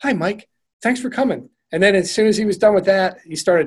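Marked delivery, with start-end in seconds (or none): 0.0-1.5 gentle, soft, mellow, friendly, slightly higher voice. Retelling how he stopped mid-command to greet you, in a gentle voice. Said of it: "a gentle voice just says".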